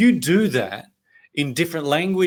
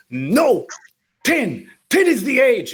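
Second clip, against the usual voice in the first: put-on angry, very high, very slow, drawn-out French accent; 11 semitones higher, 4 dB louder than usual. Retelling what the french school principal said back, in the principal's french accent. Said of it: "in her French accent".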